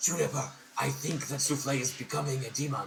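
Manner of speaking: in-character stage half-whisper, still audible. Voicing a character who half-whispers a worry to another character: half-whispering in character. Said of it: "Azra's going to whisper to Juniper".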